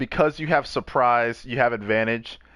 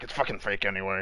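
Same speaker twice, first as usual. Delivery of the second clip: soft, muttered mumble under the breath; 3 semitones lower, 7 dB quieter than usual. Voicing a character who leaves the cellar: mumbling under his breath. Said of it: "mumbles under his breath".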